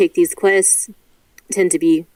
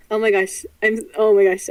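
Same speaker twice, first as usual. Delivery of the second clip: words spilling out between bursts of laughter; 4 semitones higher than usual. Reacting to a player calling the character Fred Word: laughing while talking. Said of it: "I'm laughing so much".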